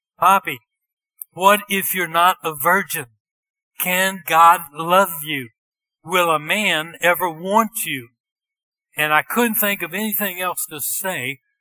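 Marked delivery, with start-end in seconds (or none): 0.2-8.1 loud scream, sobbing through tears. Retelling a teenage girl jumping up and screaming at the speaker, imitating a crying scream. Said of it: "she's crying, and she screams at me".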